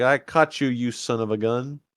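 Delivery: ordinary talk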